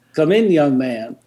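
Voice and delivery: put-on easygoing, drawling Texas accent. Retelling being invited in by Dr. Ray, imitating Dr. Ray's Texas accent. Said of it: "and in his accent".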